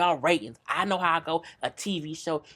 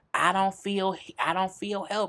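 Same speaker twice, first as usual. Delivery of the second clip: ordinary talk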